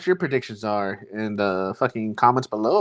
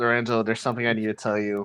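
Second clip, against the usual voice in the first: normal talking voice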